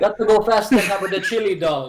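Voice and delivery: put-on Jamaican accent delivery. Riffing on a movie character with the other speakers: jamaican accent. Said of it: "that sounded more Jamaican".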